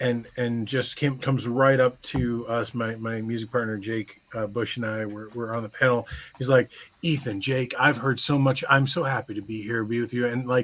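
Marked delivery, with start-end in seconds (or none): 7.0-10.3 put-on, over-the-top nice, sweet voice. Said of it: "he was so over the top nice".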